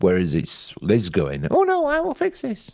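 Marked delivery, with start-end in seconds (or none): 1.5-2.7 put-on Lancashire accent, pitched right up. Describing how Liz reacts when told something, the speaker quotes her: Liz in Lancastrian accent. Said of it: "but in a Lancastrian accent".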